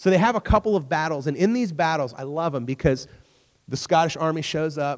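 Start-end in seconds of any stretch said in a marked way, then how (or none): none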